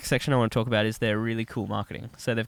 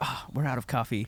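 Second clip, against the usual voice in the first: put-on American accent in a commercial announcer voice; 5 dB quieter than usual. Retelling an ad, quoting the guy in it: put-on American accent. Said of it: "Is that an accent?".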